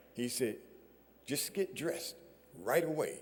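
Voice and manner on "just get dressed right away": put-on South African accent, quieter. The speaker quotes a visiting man's reply, in a South African accent. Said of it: "in his South African accent".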